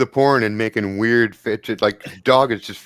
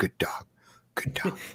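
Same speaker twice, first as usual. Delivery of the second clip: eager, excited, breathy whisper under the breath; 3 semitones higher, 12 dB quieter than usual. Retelling a moment, the speaker recreates whispering to themselves, in an excited whisper. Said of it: "You can hear me whispering to myself".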